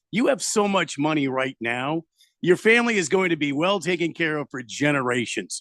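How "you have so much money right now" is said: ordinary talk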